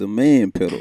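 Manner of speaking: very loud, deep, bass-heavy booming voice. Showing how the phrase must be said: deep, bassy voice. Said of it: "You gotta put a little bass in your voice when you say that".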